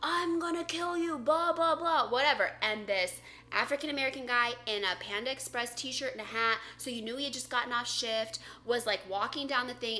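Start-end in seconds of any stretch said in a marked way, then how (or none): 0.0-2.1 acted, out-of-control, high screaming. Retelling what a man out of his mind was screaming: retelling screamed threats. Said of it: "he's like screaming like all these obscenities".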